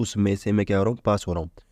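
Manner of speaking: normal talking voice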